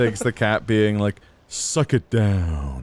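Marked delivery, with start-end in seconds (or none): 1.5-2.8 low, deep voice, drawn out and falling. Imagining a Duke Nukem line said in a character's voice: Big the Cat voice. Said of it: "in the, uh, Biggs the Cat voice".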